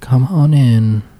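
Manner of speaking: barely audible, weak, faint, distant-sounding voice. A voice answers a knock from inside the room, in a really faint voice. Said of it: "you hear like a really faint voice".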